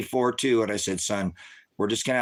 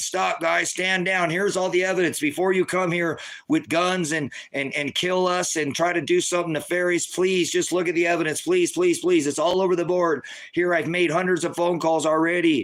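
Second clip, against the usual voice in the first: mock desperate pleading, pitched up; 7 semitones higher than usual. Retelling pleading with officers to stand down: retelling a desperate plea. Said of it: "And I'm pleading".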